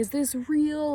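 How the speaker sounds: very high, loud, shrill, panicked shriek. Retelling a woman's panic while walking to the barn: imitating someone screaming. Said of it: "freaking out and screaming and being like".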